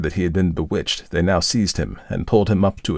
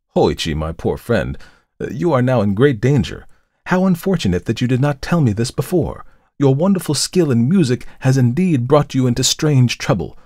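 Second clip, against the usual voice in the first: gently reproachful, worried, kindly, pitched a little high; 6 semitones higher, 3 dB louder than usual. Reading the priest's words to the friend who told him everything, in kindly reproach. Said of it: "who said to him, in a tone of kindly reproach".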